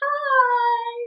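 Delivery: play-acted, very high, drawn-out, sugary little-angel voice. Retelling greeting the obstetrician, imitating own innocent greeting. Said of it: "put on my little halo".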